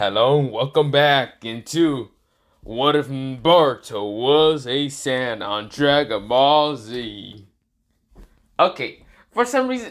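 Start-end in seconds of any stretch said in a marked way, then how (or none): 0.0-7.5 put-on dramatic announcer voice, louder. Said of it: "I tried to do the, uh, voice".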